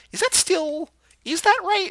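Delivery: puzzled squeak, high, loud and unsure.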